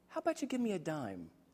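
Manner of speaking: small, soft, timid, meek voice. Retelling a child under the covers, the speaker imitates a meek little voice. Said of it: "a little meek voice says".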